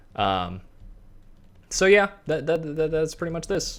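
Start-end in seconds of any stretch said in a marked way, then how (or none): 2.2-3.8 stuttering, repeating the opening word, slightly higher pitch. Wrapping up a tour of the area: stuttering. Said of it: "I keep stuttering".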